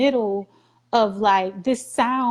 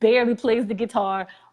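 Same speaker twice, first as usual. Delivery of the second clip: usual speaking voice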